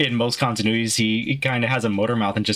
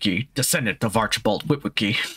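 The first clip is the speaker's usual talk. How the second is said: noble, heroic giant robot leader voice. A friend coaxes them into the Optimus Prime voice: Peter Cullen impression. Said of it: "do that in your best Peter Cullen impression".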